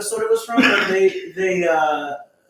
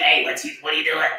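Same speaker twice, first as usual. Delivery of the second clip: put-on frog-like kid voice, lower; 4 semitones lower than usual. Describing a kid from a nineties movie: imitating a kid who talks like a frog. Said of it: "the Little Rascals kid that talks like a frog".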